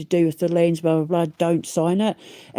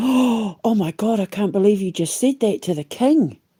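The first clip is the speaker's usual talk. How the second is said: put-on gasping shock, higher pitch; 3 semitones higher than usual. Retelling how people in the room reacted to a threat against the king: imitating a shocked gasp. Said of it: "Apparently the people in the room gasped".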